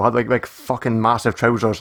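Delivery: ordinary delivery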